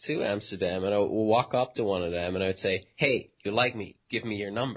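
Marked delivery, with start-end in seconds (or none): 3.0-4.8 put-on creepy, sleazy tone. Retelling walking up to women to get rejected: imitating own creepy pickup line. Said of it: "properly creepy".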